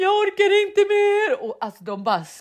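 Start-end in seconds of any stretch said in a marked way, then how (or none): 0.0-1.4 very high, drawn-out, sobbing screamed wail. Describing people hitting walls with pillows, the speaker imitates women screaming and crying. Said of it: "de skrek så här".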